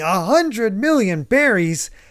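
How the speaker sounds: high, contained yelp. Recapping a chapter where they reach a currency exchange, imitating Luffy screaming. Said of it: "Luffy is just screaming".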